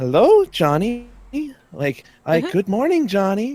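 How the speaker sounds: very gentle, creepy coo. Retelling a creepy old boss's morning greeting: imitating boss's gentle voice. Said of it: "just very like gentle voice".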